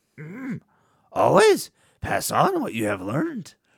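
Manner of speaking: high, loud character voice with wide swooping pitch. Asked by the other speaker to say the quote like Yoda: Yoda voice. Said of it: "Shouldn't you say it like Yoda".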